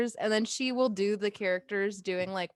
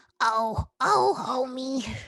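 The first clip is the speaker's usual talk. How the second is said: raspy voice made sweet and hopeful; 4 dB louder than usual. Two friends trading impressions of Homer's family, one doing a sweeter Marge voice. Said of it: "It's it's a little sweeter".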